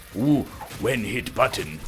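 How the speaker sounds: put-on raspy elderly sage voice. Playing a game, joking about hitting the button, Yoda voice. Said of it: "That's Yoda".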